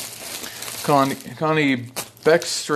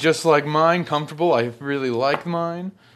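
ordinary talk

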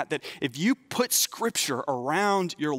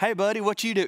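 put-on drawled southern accent, pitched up; 5 semitones higher than usual. Showing how he picks up the voice of whoever calls him: Andy Langston's southern drawl. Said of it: "this southern drawl come out of my mouth".

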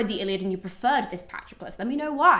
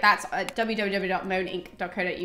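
very fast, rapid-fire, all run together; 2 semitones lower than usual. A book reviewer gives their website address at the end, very fast. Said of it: "I always say that really fast".

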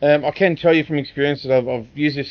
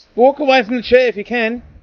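high, raised, loud yelling; 8 semitones higher, 3 dB louder than usual. Watching someone near a chair, yelling at him. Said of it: "I'm yelling at him".

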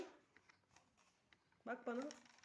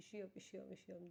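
softer, mock complaining tone. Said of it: "Bana diyorsun yani".

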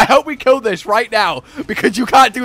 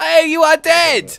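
delighted, gleeful, high, drawn-out call; 8 semitones higher than usual. Telling a teammate in the game that they died: joyful. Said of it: "I don't know why I said that with such joy".

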